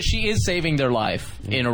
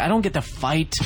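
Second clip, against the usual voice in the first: ordinary delivery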